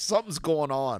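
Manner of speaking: put-on agitated, getting angry. Retelling confronting the guy about his missing wife and dog: imitating himself getting angry. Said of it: "getting pissed".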